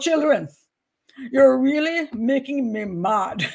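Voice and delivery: Jamaican-style delivery. Speaker contrasts how an American and a Jamaican scold kids, Jamaican accent. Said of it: "if I go into Jamaican stuff".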